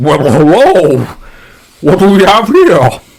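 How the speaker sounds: giant blobby creature voice. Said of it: "And he goes".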